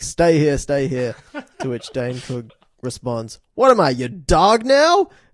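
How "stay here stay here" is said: ordinary delivery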